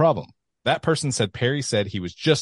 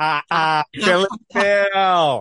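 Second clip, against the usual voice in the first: put-on mocking laugh, higher and louder; 8 semitones higher, 6 dB louder than usual. Asked to do the laugh too: Seth Rollins laugh impression. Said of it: "You gotta do the laugh too".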